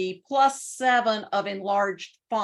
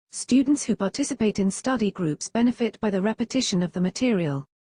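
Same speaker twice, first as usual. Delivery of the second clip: British accent, UK English reading voice. Speaker plays a course sentence using the app's british reading voice, british accent. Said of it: "listen to this sentence with our British voice".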